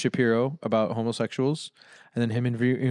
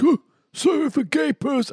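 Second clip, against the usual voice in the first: put-on old man voice, pitched higher; 4 dB louder than usual. Retelling an interview question, imitating Piers Morgan in an old man voice. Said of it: "I don't know why he turned into an old man".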